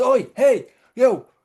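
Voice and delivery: shrill, very high-pitched shout. Retelling a joke about a man stuck in a hole: imitating a man shouting for help. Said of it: "he shouts".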